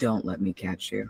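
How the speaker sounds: voice drops to a low level. Voicing a character speaking over the comm system: voice drops low. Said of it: "And his voice drops".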